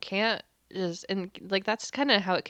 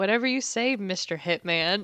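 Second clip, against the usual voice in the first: cheeky, sassy, lippy tone. Retelling what Style says to the hitman: imitating Style's sassy reply. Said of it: "Style is just so sassy. He's like".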